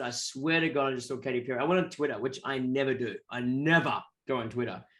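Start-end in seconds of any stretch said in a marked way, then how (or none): none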